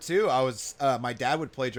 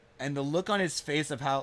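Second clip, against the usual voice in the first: ordinary delivery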